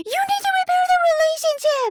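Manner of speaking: put-on shrill, very high, whiny baby voice from adult. Imitating a woman from the story, mocking a whiny voice. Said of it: "she would just whine, a grown adult whining".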